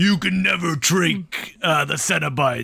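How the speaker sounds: declaiming like a horror villain. Talking about Hellraiser villains and imitating Pinhead: booming Pinhead voice. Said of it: "Pinhead has a booming voice. He's like".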